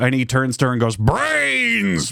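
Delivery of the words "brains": very high, rasping, creaky zombie groan. Acting out Edward turning to Bella in a reimagined Twilight scene: zombie voice. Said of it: "Just a normal zombie".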